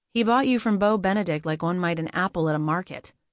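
plain reading voice

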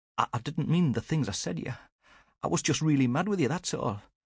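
very high, halting, stuttering voice. A narrator reading a woman's line to a man who came up behind her, stuttering. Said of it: "she stuttered".

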